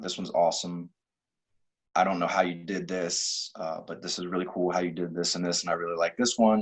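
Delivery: normal talking voice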